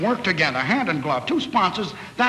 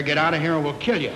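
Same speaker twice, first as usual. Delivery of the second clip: usual speaking voice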